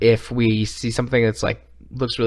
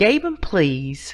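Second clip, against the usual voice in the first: mock sassy delivery, higher pitch; 7 semitones higher than usual. Joking about a mod name, saying it the way just suggested: put-on sassy voice. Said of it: "You gotta say it all sassy".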